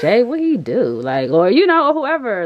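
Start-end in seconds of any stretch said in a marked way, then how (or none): 0.0-0.8 sassy, spicy, gossipy tone. Showing how to ask for the tea on what he did: spicy gossipy delivery. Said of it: "make it spicy".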